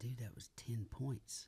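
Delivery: slow, hushed whisper.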